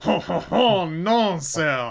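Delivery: put-on booming, very loud, haughty, snooty French waiter accent. A game narrator breaks into a snooty french waiter voice. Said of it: "I love doing snooty French waiter voice".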